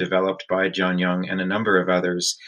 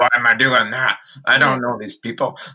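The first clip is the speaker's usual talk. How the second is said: put-on old man voice, higher, louder; 4 semitones higher, 5 dB louder than usual. Speaker recalling his thoughts at twenty about attending a teen graduation, old man voice. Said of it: "You sounded like an old man".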